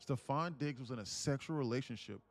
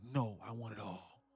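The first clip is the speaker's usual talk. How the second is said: mocking, imitated voice. Retelling how she turned down the offer to settle: imitating her refusal. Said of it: "And she was like".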